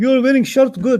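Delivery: clumsy non-native English, words swapped. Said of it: "They don't say good shirt".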